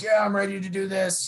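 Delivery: high, stoked, fired-up, excited yell. Retelling what a guy on the monument yelled: imitating someone yelling. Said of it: "he was just yelling".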